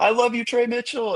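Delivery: put-on young kid calling out, high-pitched yell. Retelling a younger kid in the crowd at game three: imitating a kid yelling. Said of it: "started yelling".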